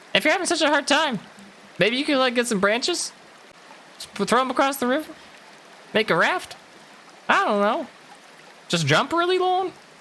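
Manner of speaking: very high little bird voice.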